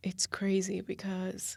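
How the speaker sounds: slow, choked-up, teary whisper, on the verge of crying.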